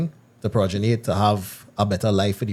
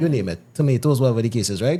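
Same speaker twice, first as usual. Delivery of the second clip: ordinary delivery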